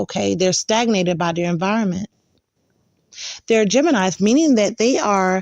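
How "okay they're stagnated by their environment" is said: normal talking voice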